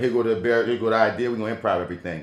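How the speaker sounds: usual speaking voice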